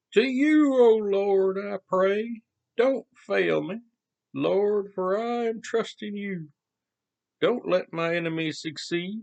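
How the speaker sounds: wibbly-wobbly cartoony voice. Trying out a voice while reading a Psalm aloud: wobbly cartoony voice. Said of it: "It's a little too cartoony".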